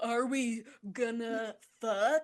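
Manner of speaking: mock spiteful, mean, nasty delivery. Retelling how she asked him the question, imitating her saying it meanly. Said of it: "she says it like so mean".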